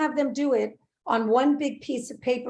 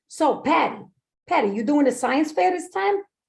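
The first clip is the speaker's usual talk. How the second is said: put-on kid voice with a Brooklyn accent; 2 semitones higher than usual. Giving a character named Ralphie a voice, speaking to Patty in a Brooklyn accent. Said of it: "I'm going to make him from like Brooklyn".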